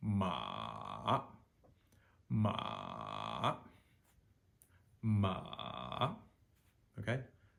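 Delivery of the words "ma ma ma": ma drawn out, dipping low then climbing, third tone. Teaching tones on the syllable ma, demonstrating the dipping third tone. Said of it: "Starts low, goes as low as we possibly can".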